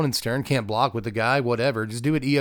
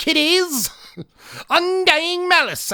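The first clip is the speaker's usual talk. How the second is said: very high, cackling ghoul voice; 3 dB louder than usual. Reading out card names during a card game, in a Crypt Keeper voice. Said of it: "Should I be doing these in a Crypt Keeper voice?".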